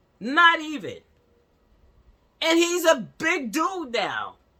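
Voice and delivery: worked-up, very loud, high-pitched yelling. Talking to the audience about a nephew: yelling. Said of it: "I'm yelling, y'all".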